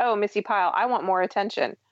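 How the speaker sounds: normal talking voice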